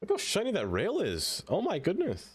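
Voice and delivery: voice cracking. Admiring how shiny a rail looks: voice cracking. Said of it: "My voice is cracking".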